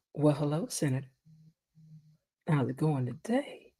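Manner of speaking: very quiet, low, soft, seductive, flirty voice. Speaker showing how she answers the phone to a senator, flirty voice. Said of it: "Because I naturally talk like this".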